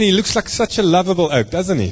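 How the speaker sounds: very sarcastic.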